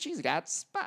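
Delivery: put-on Australian accent. Retelling what his australian wife said, after being told to do the voice: australian accent. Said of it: "do the voice, do the voice. That's not how she talks".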